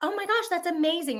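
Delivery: sweet gentle tone. Showing how to answer a customer's product choice: said really nicely. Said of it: "I say it really nicely".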